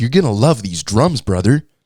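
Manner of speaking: put-on full-on, hard, round all-American accent. Retelling what a man said to him, in a strong american accent. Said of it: "he had like a really hard round American accent".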